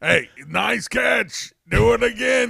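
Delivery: high, rasping, drawn-out. Quoting the movie coach who always talked like this: Lou impression. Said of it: "the guy who always talked like this".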